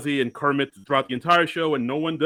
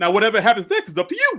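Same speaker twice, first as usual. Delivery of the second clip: lisping, high-pitched voice; 6 semitones higher than usual. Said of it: "like him saying".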